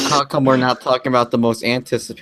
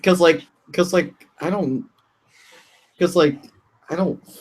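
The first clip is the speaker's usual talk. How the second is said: stammering restart, pitched up, tripping over words; 7 semitones higher than usual. A speaker in a group discussion loses his words, stuttering. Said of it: "I'm stuttering".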